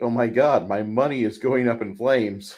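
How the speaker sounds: ordinary delivery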